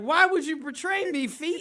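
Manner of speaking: high, loud mock wounded wail. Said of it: "he was like".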